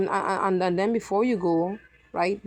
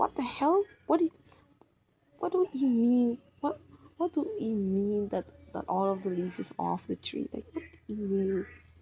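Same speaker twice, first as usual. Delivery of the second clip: baffled, confused, hushed half-whisper; 2 semitones higher, 5 dB quieter than usual. Describing a friend's reaction to a strange remark, acting out a confused half-whisper. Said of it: "your friend is whispering like".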